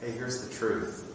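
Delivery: ordinary talk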